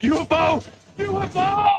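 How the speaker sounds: very high, very slow, drawn-out shouting. In a UFO skit, a caller shouts over a breaking-up line: yelling. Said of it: "dude, stop yelling".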